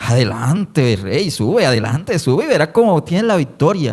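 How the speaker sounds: mocking, taunting, sarcastic tone. Imagining the scene, Micaías urges the king onward, acting out mockery. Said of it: "Eso lo hacía como en burla".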